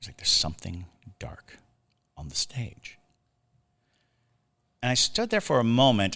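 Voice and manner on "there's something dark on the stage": hushed stage whisper the whole room can hear. Retelling what the youngest kid said at the theater: imitating a kid whispering.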